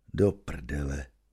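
very low, hushed, awestruck half-whisper. Reading the narrator as Evžen lights up the garage, an amazed half-whisper. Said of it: "v ohromení zašeptám".

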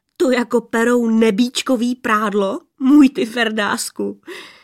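teasing, mocking. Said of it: "Nesměj se".

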